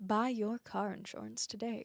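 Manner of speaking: radio commercial announcer voice, selling tone. After being told they have a voice for radio, trying a radio ad announcer voice. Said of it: "ads one day for radio".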